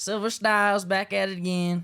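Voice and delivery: put-on very high, drawn-out country twang. Introducing himself again after being asked to: put-on country accent. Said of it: "you gotta do it in the country".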